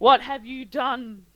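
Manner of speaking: very loud, shrill shriek in a man's voice. Describing a figure who arrives and shrieks at you, doing a mock shriek in a man's voice. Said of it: "he shrieks at you and he says".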